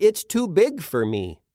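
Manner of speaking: plain reading voice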